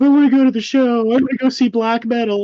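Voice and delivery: very high, loud, tearful crying plea. Retelling a young girl's plea to go to a show: imitating someone crying. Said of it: "she's crying".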